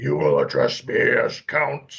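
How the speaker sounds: big, gruff, commanding booming voice. Recounting a performer's line in a relatively empty theater, retelling a booming voice. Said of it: "booming voice".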